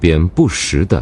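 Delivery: ordinary delivery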